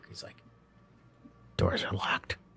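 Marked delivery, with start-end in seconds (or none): 1.6-2.3 hushed whisper, very close. Voicing a flying character who lands beside a player: whispering in character. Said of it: "you hear a whisper in your ear".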